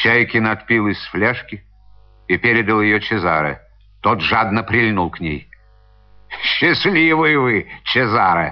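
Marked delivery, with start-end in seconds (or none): 6.4-8.5 gentle, mocking, teasing ribbing. A boatswain takes the flask from a man who drank greedily, mocking. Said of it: "насмешливо обратился к нему боцман".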